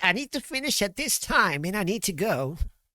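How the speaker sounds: very high mimic voice, words stretched long. Imitating the other speaker saying they must finish and go: imitating the other speaker. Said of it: "Is that how I sound like to you?".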